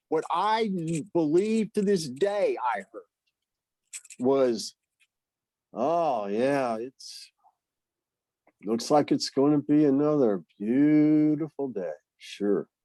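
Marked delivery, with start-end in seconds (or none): 5.7-12.6 mock bitter, twisted negative tone. Retelling how depression made the wife's words sound: imitating twisted negative tone. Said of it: "filter it and twist it, never in my favor".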